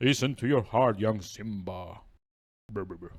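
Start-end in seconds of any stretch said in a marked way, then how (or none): 0.0-2.0 put-on deep movie voice. Quoting a line after naming the voice: James Earl Jones voice. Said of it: "in, like, a James Earl Jones voice".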